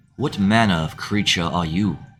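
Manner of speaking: low, cool, composed voice with dark tone. Voicing a dark-clad ninja addressing Shadow, low, cool voice. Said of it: "he says he says in a low, cool voice".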